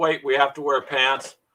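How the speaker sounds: ordinary talk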